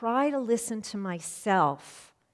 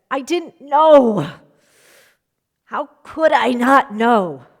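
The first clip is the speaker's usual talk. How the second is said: play-acted very loud, gruff, hard-pressed voice; 3 semitones higher, 16 dB louder than usual. Speaker recounting a conversation with their dad: retelling dad's gruff pressured voice. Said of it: "still in a gruff, pressured voice".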